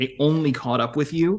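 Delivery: ordinary talk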